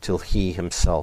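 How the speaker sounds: plain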